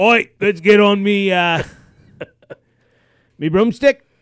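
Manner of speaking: put-on high Australian accent. Guessing what accent a character has, mock Australian accent. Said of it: "I thought maybe he was Australian".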